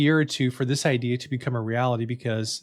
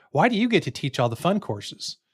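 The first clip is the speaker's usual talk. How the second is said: put-on sarcastic tone; 5 semitones higher than usual. Speaker recalls another professor's question in a faculty meeting, mimicking a sarcastic tone. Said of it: "said in kind of a sarcastic tone".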